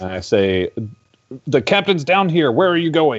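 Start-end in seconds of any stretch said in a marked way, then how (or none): 1.5-3.2 loud, high shout projected over a distance. Player character casts Thaumaturgy to call to people far away: shouting from far away. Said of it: "you shout this out as you do".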